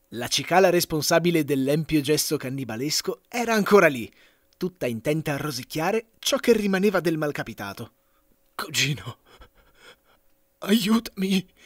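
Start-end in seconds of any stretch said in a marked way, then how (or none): 8.6-11.5 a thread of a voice, faint, gasping, pleading. A half-eaten cicada begs its cousin for help, gasping in a faint voice. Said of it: "rantolò quest'ultimo con un filo di voce".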